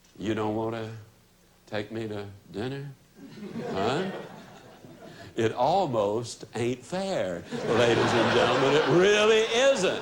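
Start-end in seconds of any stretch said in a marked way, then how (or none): 0.2-2.9 very low, soft, lowered voice. Speaker shows the audience how to answer him: lowered voice. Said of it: "You just lower your voice and say".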